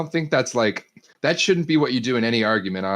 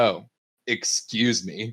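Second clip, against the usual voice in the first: mock condescending tone, lower pitch; 3 semitones lower, 4 dB quieter than usual. Acting out someone pushing past then turning around: imitating a condescending tone. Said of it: "so fucking condescending when you say it like that".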